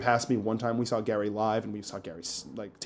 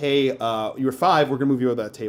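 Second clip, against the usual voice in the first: usual speaking voice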